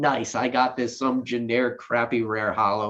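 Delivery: ordinary talk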